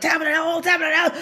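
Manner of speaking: put-on unhinged shouting, high, loud and fast.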